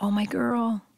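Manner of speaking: imitated whisper. Retelling what dad said after hugging mom: imitating dad whispering. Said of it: "whispers in the best moment where he goes".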